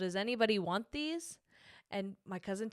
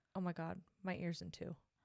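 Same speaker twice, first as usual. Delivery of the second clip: put-on near whisper, lower and quieter; 4 semitones lower, 8 dB quieter than usual. Retelling what a friend said while painting: imitating a near whisper. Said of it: "almost a whisper".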